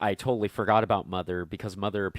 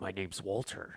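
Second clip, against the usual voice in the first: put-on gruff, hushed voice in an American accent; 9 dB quieter than usual. Describing an android in a movie, imitating how he talks: gruff Walter voice. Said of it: "kind of talks with a gruff voice because he's like".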